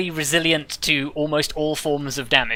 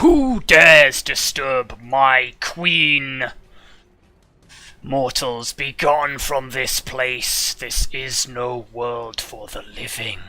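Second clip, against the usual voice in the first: grand, booming proclaiming voice carrying like distant thunder; 3 semitones lower than usual. Narrating, the speaker voices someone calling from inside the castle in a thunderous booming voice. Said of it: "you hear a thunderous, thunderous voice say".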